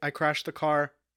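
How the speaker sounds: ordinary talk, nothing marked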